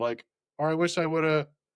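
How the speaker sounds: plain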